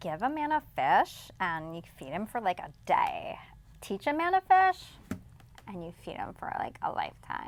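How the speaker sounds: put-on sing-song Valley Girl accent. Taking a turn saying the fish proverb as a Valley Girl: Valley Girl accent. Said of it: "Valley Girl".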